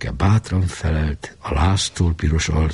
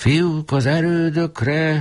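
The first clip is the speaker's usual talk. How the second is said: very high, screeching shriek; 12 semitones higher than usual. A voice rings in a staggering boy's ears, shrieking. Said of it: "süvítette egy hang".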